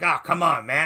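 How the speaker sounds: fake incoherent grumbling old man. Retelling a wrestling segment, imitating Jake Roberts grumbling like an old man. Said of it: "He's grumbling like an old fucking incoherent babbling man".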